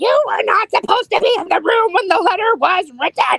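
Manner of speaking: play-acted high, hysterical screaming meltdown. Retelling a character's honeymoon meltdown, imitating her yelling at him. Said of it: "she's like yelling at him".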